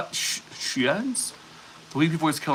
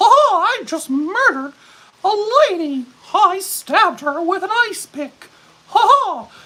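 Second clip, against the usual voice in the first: very high-pitched, loud, drawn-out delivery; 7 dB louder than usual. Imagining a killer calling nine one one: Mickey Mouse voice. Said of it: "he's doing it in a Mickey Mouse voice".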